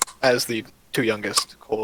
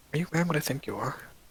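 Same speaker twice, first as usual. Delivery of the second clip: soft, close half-whisper, pitched up; 5 semitones higher, 5 dB quieter than usual. A narrator voicing a woman hugging the listener's character: half-whispering. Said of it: "she kind of whispers in your ear".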